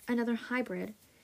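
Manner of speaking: plain reading voice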